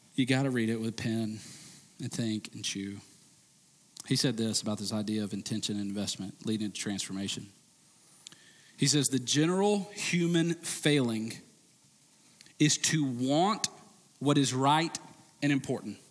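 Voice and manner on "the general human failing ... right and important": slow, drawn-out reading. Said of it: "I try to read it slow".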